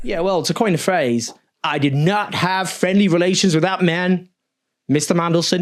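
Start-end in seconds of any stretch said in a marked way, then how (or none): 1.6-5.6 badly done fake American accent. Coining a phrase, then apologizing for it: awful american accent. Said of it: "Sorry about the American accent there".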